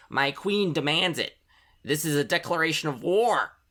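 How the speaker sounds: high, little bee character voice. Voicing the bee demanding honey from a player: bee character voice. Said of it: "shakes it and goes".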